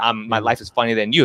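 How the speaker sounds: ordinary talk, nothing marked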